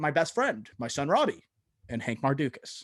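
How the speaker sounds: bone-dry, straight, unamused delivery. Quoting a supporting actor's straight-faced one-liner: imitating J K Simmons deadpan. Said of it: "like, deadpan. He's like".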